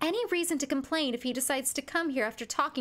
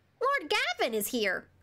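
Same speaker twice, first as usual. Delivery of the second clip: put-on character voice, pitched up high and little; 5 semitones higher than usual. Voicing a character perched on a doorknob in a game: Archie voice. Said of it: "I gave him this voice".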